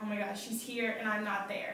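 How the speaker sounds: ordinary talk, nothing marked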